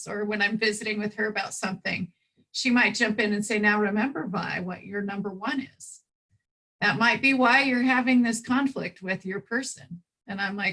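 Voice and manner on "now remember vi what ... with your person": plain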